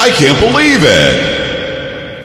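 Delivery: very slow, drawn-out, sarcastic fake astonishment and disbelief. Naming a file of news stories aloud: sarcastic fake disbelief. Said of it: "Being very sarcastic".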